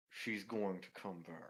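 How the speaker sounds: forced through clenched teeth. A game narrator voices a character who just snapped an arrow: through gritted teeth. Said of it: "through gritted teeth".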